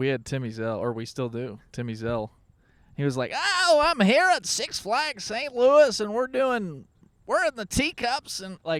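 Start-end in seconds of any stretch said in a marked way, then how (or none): 3.3-8.4 loud, very high, zany wacky newscaster voice. Imitating a zany local news guy's segment: archetypal zany news voice. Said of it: "you're doing a, uh, archetypal voice".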